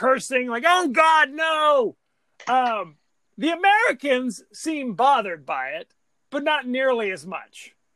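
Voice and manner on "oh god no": yelling at full force. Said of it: "[name] and [name] are screaming, cursing".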